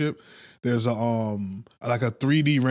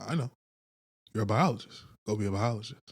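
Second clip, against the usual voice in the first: put-on cold, callous voice, quieter; 2 semitones lower, 6 dB quieter than usual. Retelling a film plot, voicing the German lady: imitating a cold, callous character. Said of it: "the German lady comes in very cold and callous".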